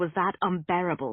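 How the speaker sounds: plain reading voice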